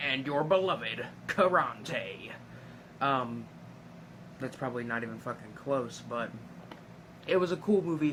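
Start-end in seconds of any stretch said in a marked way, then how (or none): 0.0-2.3 cheesy, corny put-on character voice. Speaker impersonating a movie character's voice: cheesy Karante impression. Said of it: "the voice for uh, for Karante is very very very kind of perfectly cheesy. Um, I kind of want to do an imperson- impersonation".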